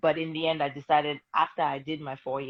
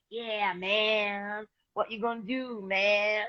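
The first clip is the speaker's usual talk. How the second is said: over-the-top put-on American accent, high and very slow; 7 semitones higher than usual. Retelling a childhood birthday video: imitating an american accent. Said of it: "when I tried to imitate an American accent".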